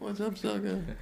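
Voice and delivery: put-on soft-spoken, low-energy voice. Retelling how Ralphie May greeted people while sitting down, imitating soft-spoken Ralphie May. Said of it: "very soft-spoken, sitting down, and energy very low".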